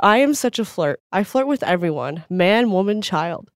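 ordinary talk

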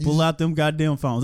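ordinary talk

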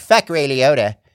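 loud, bitchy tone. Demonstrating a friend's catchphrase about ray liotta. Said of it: "That's the Corey impression".

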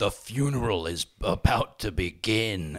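exaggerated, hammy, sinister drawl, very slow and creepy. Retelling a film scene where the Tall Man speaks: over-the-top creepy Tall Man voice. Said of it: "in this, like, over-the-top, creepy way".

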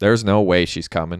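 ordinary delivery, nothing marked

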